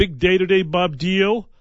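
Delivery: sounding excited. Radio host greeting an on-air partner on a big day, excited voice. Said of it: "Can you tell in my voice?".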